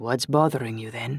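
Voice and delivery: ordinary delivery, nothing marked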